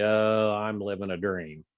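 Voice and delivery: mock, very sarcastic, slow, heavy tone. Retelling how officers answer a question about work: imitating a sarcastic reply. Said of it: "they'll be very sarcastic".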